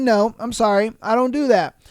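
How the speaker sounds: put-on polite voice. Telling a story about a sister-in-law's request, retelling a polite reply. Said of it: "I answered politely".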